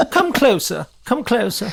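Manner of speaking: put-on very high, swooping, old-time theatrical luvvie voice. Redoing a dressing-room bit, answering a knock as a 1920s lovey actor. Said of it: "Lovey actor from the 1920s".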